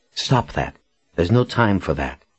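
ordinary delivery

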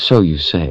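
ordinary delivery

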